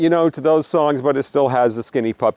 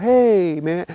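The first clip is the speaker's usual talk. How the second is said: easygoing, very calm, totally serene voice; 4 semitones higher than usual. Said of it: "just very calm, very serene".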